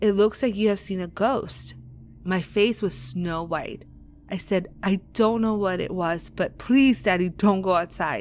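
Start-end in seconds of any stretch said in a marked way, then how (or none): 4.8-8.2 put-on desperate pleading. Telling a story, quoting what they said to their dad, retelling begging. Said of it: "I begged and I begged".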